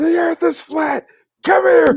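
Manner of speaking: very high-pitched mock yelling. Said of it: "He's yelling at the kids".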